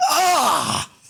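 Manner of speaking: sudden, high-pitched cry of pain. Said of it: "He's like".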